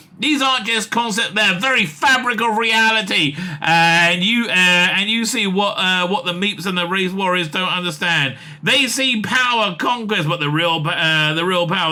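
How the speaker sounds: usual speaking voice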